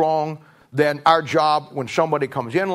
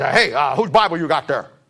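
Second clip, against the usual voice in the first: really gruff way of talking. Retelling how a church member questioned a kid: imitating a gruff voice. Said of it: "he had a real gruff voice".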